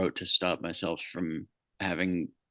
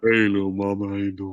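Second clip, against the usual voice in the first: mock lowered voice, artificially deep; 4 dB louder than usual. Retelling how a guy greeted a woman who pulled up, artificially lowered voice. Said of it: "artificially lowered his voice a bit".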